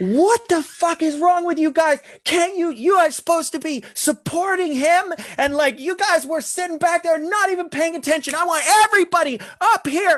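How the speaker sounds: mock very high-pitched, furious screaming. Retelling how a furious director screamed at everyone on set, imitating a director yelling. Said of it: "he starts yelling".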